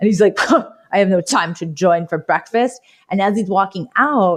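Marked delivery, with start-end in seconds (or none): 0.4-2.8 put-on huffy, movie-style voice. Retelling a movie breakfast scene, the speaker does a huffy Timothy Dalton impression. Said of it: "he's like huffing and puffing".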